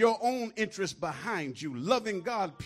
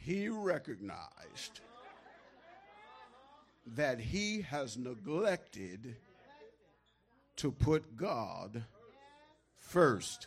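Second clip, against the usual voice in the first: very slow, deliberate, each word drawn out; 7 semitones lower, 7 dB quieter than usual. Repeating a sentence about putting god first, slow. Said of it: "Let me say it slow".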